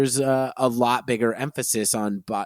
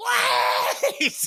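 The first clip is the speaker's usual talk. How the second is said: mock scream shrunk down to a mild shouted yell. Retelling a dinner party scene where a character screams: imitating someone screaming. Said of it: "And he screams".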